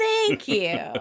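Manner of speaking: put-on emphatic voice. Retelling a scene, imitating Ross: emphatic Ross impression. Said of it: "Ross does his emphatic".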